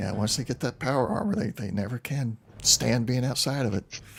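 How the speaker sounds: muttered quietly under the breath. Voicing a character talking to some of the men: muttered under his breath. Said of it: "you think you hear under his breath".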